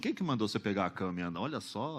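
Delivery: fast, hushed, low and judgmental rattled murmur.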